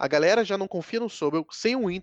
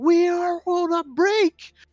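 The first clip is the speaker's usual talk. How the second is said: put-on shrill, very high, drawn-out yell; 12 semitones higher, 5 dB louder than usual. Picturing a character looking into the camera mid-episode, mock shouting as Sobel. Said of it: "olhando pra câmera e gritando assim".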